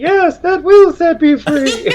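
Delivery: very high, loud, gender-neutral ventriloquist voice. Answering a question as if the robot spoke: gender-neutral ventriloquist voice. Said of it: "this gender-neutral voice".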